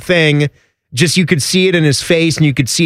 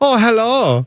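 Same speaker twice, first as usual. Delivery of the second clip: high-pitched put-on German accent on "hello"; 6 semitones higher than usual. Joking with another speaker about not being a Nazi: put-on German accent. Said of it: "Are you doing my German now?".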